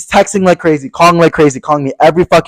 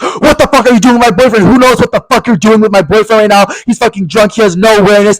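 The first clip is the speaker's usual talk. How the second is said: mock hostile, accusing, high-pitched angry ranting; 5 semitones higher than usual. Retelling a phone call with a blacked-out man's boyfriend, imitating him yelling. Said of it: "Stop fucking yelling at me".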